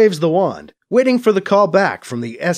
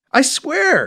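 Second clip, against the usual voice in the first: a touch of exasperation, pitched up; 9 semitones higher than usual. A man answers a suspicious woman's demand with a hint of exasperation. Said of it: "he says with a hint of exasperation".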